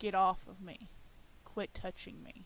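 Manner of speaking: deep demon-like voice. Retelling words heard from her husband as she falls asleep, demonic voice. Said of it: "I hear this demonic voice say".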